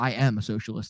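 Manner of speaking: bone-dry, low, matter-of-fact acted deadpan. Retelling their own answer during a debate with friends, retelling a deadpan reply. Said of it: "And I like deadpan".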